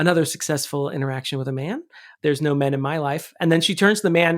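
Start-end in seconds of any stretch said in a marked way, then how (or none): none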